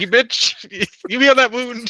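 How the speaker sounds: shrill, very high, angry shrieking yell. Voicing a character forcing a wound to heal: yelling at the blood. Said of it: "yelling at the blood".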